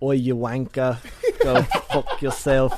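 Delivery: put-on Australian accent. Answering a co-host's question on the show, in a put-on Australian accent. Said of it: "do an Australian accent".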